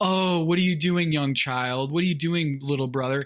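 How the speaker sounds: mocking, put-on condescending tone. Retelling a reply to an older brother at ping pong: mocking a condescending older brother. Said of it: "don't give me the".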